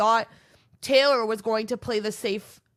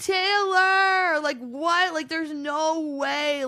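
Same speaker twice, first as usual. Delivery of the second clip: put-on outspoken, high, drawn-out yelling; 6 semitones higher than usual. Retelling another person's reaction to a choice: imitating someone yelling. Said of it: "Just yelling at him".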